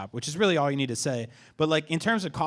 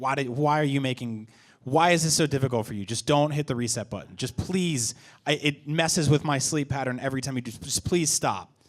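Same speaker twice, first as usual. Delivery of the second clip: normal talking voice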